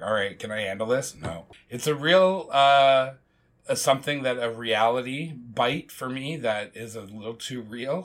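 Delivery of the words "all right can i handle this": usual speaking voice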